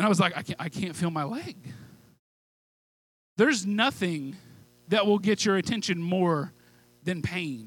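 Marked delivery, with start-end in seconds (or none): 0.4-1.6 much quieter acted-out frightened crying and stammering. Retelling falling on the stairs as a boy, re-enacting his frightened cry to his parents. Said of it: "boy fallen on stairs, crying for parents".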